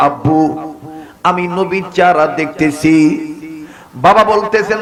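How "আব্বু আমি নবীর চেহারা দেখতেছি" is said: plain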